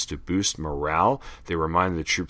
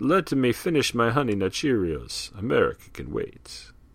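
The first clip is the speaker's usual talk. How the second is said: put-on vampire voice, higher pitch; 5 semitones higher than usual. Reading an old ad aloud, voicing a reply: Dracula-like voice. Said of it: "That sounded like Dracula".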